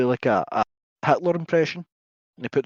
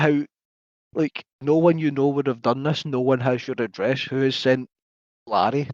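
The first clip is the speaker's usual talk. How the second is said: ordinary talk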